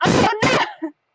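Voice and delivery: high, panicked meltdown cry. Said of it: "just had a total meltdown and went".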